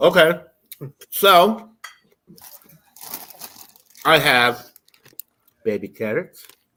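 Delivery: slow speech through a mouthful of food. A speaker describes their snack while eating, talking with mouth full. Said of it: "As I have my mouth full".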